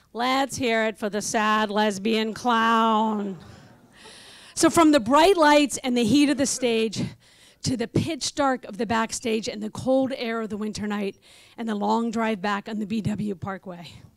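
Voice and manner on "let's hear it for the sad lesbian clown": bone-dry, flat, slow deadpan, drawn out. Retelling what someone said after the speaker was gonged, retelling a deadpan line. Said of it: "Nancy deadpans".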